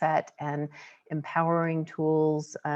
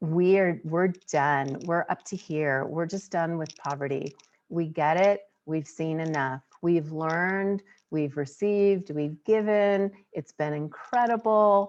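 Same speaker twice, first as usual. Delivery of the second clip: ordinary talk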